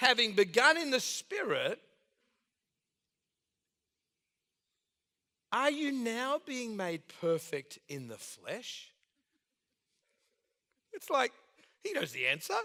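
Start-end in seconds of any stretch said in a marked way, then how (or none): 0.0-8.9 light, slow, sing-song sarcastic tone. Reading a scripture line aloud with a put-on sarcastic twist. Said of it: "this is a little sarcastic twist".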